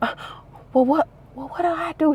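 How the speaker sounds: very high, secretive, stumbling whisper. Retelling how she asked what to do: imitating someone whispering. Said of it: "whispering like I'm scamming".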